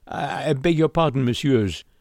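stammering. Narrator reads a man apologizing after running into two young men, stammering. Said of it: "he stammered".

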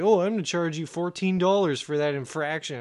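usual speaking voice

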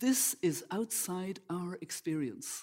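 slow, measured, very deliberate, every word weighed. Retelling what a farmer said when asked about complaining: imitating a very deliberate voice. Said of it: "saying in a very deliberate voice".

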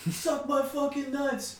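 mock very high, shrill, crude drunken yell. Retelling how a man yelled at the pizza guy, retelling a yell. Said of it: "starts yelling at the pizza guy".

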